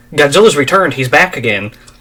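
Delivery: ordinary talk, nothing marked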